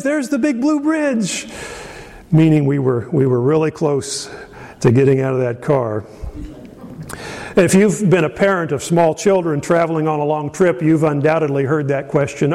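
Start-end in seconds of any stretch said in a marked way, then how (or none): 0.0-1.5 high mild mock shout. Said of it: "we would shout it out".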